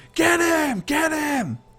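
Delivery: put-on very high, drawn-out yelling of many kids. Voicing a crowd of kids watching a fight: kids yelling and screaming. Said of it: "All the kids are yelling and screaming".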